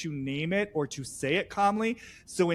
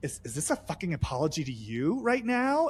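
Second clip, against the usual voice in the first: acted-out muttering under the breath. Retelling what one woman muttered under her breath to another, muttered. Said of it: "Sierra under her breath starts saying".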